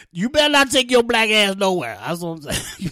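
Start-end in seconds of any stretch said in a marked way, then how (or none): 0.2-2.0 put-on old-woman voice, higher and louder. Imitating how their old women talk, in an old women voice. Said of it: "our old women voice".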